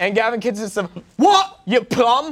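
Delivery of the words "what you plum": put-on British accent laid on thick, pitched up and loud. Doing a British accent after being asked, imitating Gavin: imitating Gavin's British accent. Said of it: "my only British is from Gavin".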